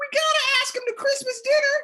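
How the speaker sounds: put-on very high, loud little kid voice.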